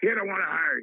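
put-on voice with short, clipped delivery. Speaker retelling the call that got him hired, imitating Bob McKay's short talk. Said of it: "And he'd always talk like this".

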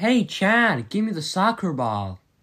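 put-on American accent. Challenged by a co-host to show an american accent, american accent. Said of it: "Go on then, let's hear it".

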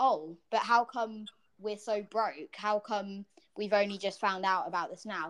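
ordinary talk

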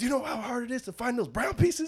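play-acted pissed-off rant, very high-pitched. Retelling how an angry man yelled at a football player: imitating someone angry. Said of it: "Harvey was pissed".

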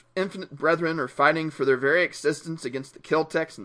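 plain

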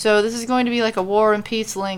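ordinary delivery, nothing marked

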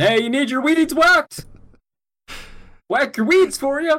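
put-on shrill, very high, loud yelling. Speaker pictures a man with a weed whacker kicking in the door, imitating someone yelling. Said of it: "just yelling".

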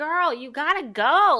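mock loud slow lecturing. Retelling a guy in a minivan pulling up: imitating someone lecturing. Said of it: "he's, like, lecturing me".

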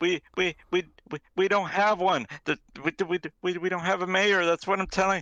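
frightened. As a secretary questioned by the party about the mayor, terrified. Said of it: "clearly terrified by you".

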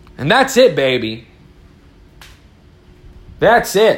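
passionate. Addressing viewers right before apologizing for sounding heated: heated. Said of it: "Sorry if I sound like I got a little heated".

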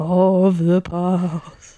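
put-on old-fashioned, haunting, ghostly voice. The speaker repeats their own phrase in another voice: old-timey ghost voice. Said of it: "me trying to be like an old-timey ghost".

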